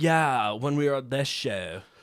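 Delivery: put-on California accent. Imitating how they talk with concert buddies: own California accent. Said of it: "kinda like, California".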